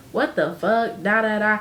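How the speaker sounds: normal talking voice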